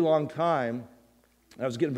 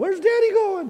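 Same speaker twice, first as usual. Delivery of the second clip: put-on very high, tearful, wailing child voice; 5 dB louder than usual. Retelling the children's reaction as the speaker drifted away: imitating children crying. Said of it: "Josh and Treasure and Chelsea are crying".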